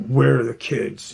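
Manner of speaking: harsh, stern, rough and aggressive demanding tone. Retelling a husband's demand again: imitating an aggressive demand. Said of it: "Just real aggressive".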